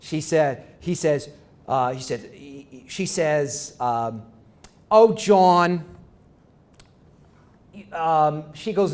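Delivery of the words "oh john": put-on Brooklyn accent. Retelling a woman panelist's remark to the host, in a put-on Brooklyn accent. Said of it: "she's from Brooklyn, so she talks like this".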